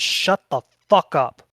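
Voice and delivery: beholder monster character voice. Voicing a beholder snapping at a salesman: Xanathar voice. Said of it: "Xanathar the Beholder looks towards the salesman and says".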